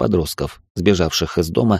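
ordinary delivery, nothing marked

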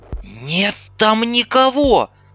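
very high, urgent shout. A woman shouts at a comrade who is firing into the trees. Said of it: "крикнула Ольга".

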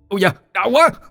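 very high, pained cry, yelp of pain. An unseen voice near an old woman on the road, crying out in pain. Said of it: "có tiếng ai đó la lên".

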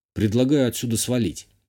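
ordinary delivery

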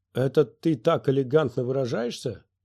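ordinary delivery, nothing marked

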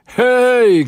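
loud, shrill, high, drawn-out shout. A man points his cane at someone, shouting. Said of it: "krzyknął grubac".

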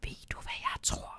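hushed whisper. He speaks privately to the narrator, whispering. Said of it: "Hvisker han til mig".

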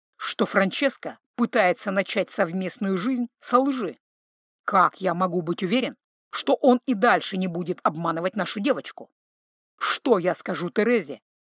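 ordinary delivery, nothing marked

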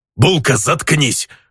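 gruff orc snarl. Reading a story aloud, voicing the orc's shouted line: growled. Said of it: "по-русски рыкнул орк".

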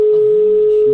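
high, loud, mocking yell.

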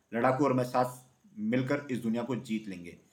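ordinary delivery

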